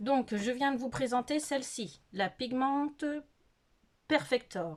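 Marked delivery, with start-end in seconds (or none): 2.1-4.8 showy, super cool put-on English accent. Presenting a makeup product by name, in a super cool English accent. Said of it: "avec mon accent anglais super cool".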